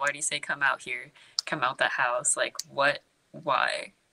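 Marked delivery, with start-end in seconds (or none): none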